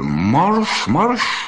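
barked at top volume. The enraged catcher, answering the woman's taunt, orders her off; barked at full throat. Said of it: "zaštěkal splna hrdla".

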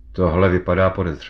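ordinary delivery, nothing marked

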